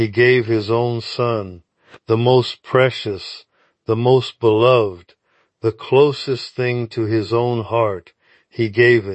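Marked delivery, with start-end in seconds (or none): none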